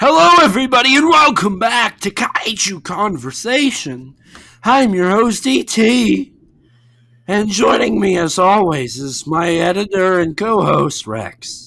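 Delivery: strained, hoarse, croaky voice giving out. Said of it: "I'm about to lose my voice".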